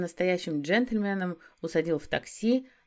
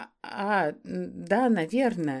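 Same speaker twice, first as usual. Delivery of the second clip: flustered, bewildered, with a smile. Rita answers Vitaly's sudden date invitation, confused and smiling. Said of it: "растерянно улыбнулась ему".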